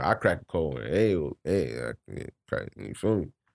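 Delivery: put-on rural American voice, mumbled. Joking about cracking a cold one: put-on "cracker mode" mumbling. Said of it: "I just went into cracker mode just now. Start mumbling like Jimbo".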